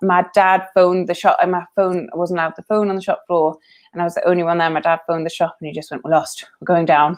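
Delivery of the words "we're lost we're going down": imitated choked-up, emotional voice. Retelling a dad's phone call to the shop: imitating dad choking up. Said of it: "choking up".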